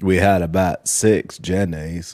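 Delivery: slow, creepy, dragged-out drawl. Arguing a point by quoting in a creepy Forrest Gump voice. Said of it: "Forrest Gump has a creepiness to his voice".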